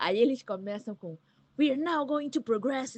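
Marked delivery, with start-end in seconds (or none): 1.6-3.0 cinema announcer, movie trailer narrator voice. Retelling the English opening line of a trailer: movie trailer narrator voice. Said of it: "com aquela voz de locutor de cinema".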